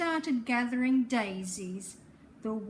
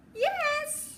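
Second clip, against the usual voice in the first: fake squeaky voice, very high, with drawn-out yes. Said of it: "squeaked the wolf".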